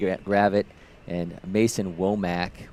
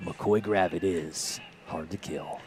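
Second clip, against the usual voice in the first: slow, hushed movie trailer announcer voice; 6 dB quieter than usual. Baseball announcer introducing a batter, in a movie trailer guy voice. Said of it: "your your movie trailer guy voice".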